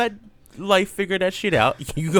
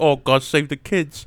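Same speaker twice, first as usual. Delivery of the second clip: mocking imitation of a man's voice, lower; 3 semitones lower than usual. Retelling what a man in his fifties says about energy drinks: mocking imitation of a man. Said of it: "Is that why he's talking like that?".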